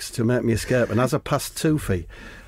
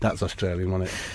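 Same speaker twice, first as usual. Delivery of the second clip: ordinary delivery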